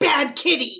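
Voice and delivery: very loud, full-throated shout. Describing how a character's spell looks in the game: yelling. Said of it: "me yelling".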